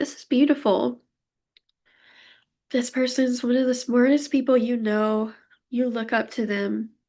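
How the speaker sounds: emotional, tearful voice close to crying. Giving a reading to the viewer, so moved they're about to cry. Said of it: "I'm gonna cry".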